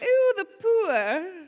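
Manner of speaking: very high, loud, haughty, lofty queen voice. Showing the queen personality voice of [name]: [name]'s queen voice. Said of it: "even now, I'll be like".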